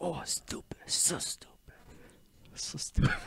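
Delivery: angry muttering to self, whispered. Retelling how an angry man walked away, mimicking angry muttering.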